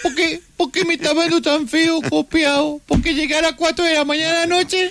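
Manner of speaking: put-on high, whining baby voice.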